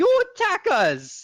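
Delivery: shrill, very high, loud goblin-voice yell. Speaking in character to Beto: shouting in Goblin. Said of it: "He he shouts in in uh, Goblin again".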